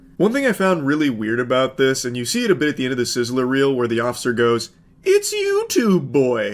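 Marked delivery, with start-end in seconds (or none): 5.0-6.6 swooping, high, sing-song cartoon owl voice. Act out the officer from the end of the Sizzler reel, in a Tootsie Pop owl voice. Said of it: "sounding like the owl from the How Many Licks Does It Take".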